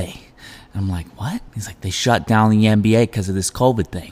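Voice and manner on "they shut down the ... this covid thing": put-on attempt at a New Jersey accent. Retelling what a coffee shop customer said about a league shutting down at the start of the pandemic, in a New Jersey accent. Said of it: "what accent is that?".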